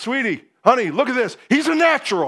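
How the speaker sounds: excited yell across a distance. Retelling a father calling to the mother about a swimming lesson: imitating dad yelling. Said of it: "my dad yells at my mom".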